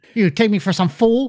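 bad threatening voice, high-pitched and slow. Quoting lines to another speaker: attempted Joe Pesci impression. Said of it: "I can't do Pesci".

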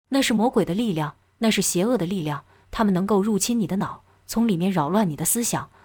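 ordinary delivery

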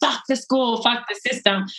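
angry outburst, spat out but reined in. Retelling what they used to scream while running anger: imitating own yelling. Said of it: "I could be yelling".

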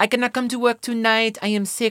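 put-on French accent in English. Act out a dancer calling in sick from Lion King, imitating Kadeen's French accent. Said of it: "She was French".

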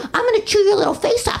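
put-on sweet, high, cutesy baby talk. Retelling how a friend talks to dogs, imitating cutesy dog talk. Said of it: "cute it up".

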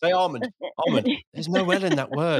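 grumpy, scolding woman's voice.

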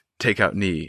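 mock whispered talking. Retelling a movie fight scene's inner monologue: imitating whispered inner monologue. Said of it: "whisper talking in his brain".

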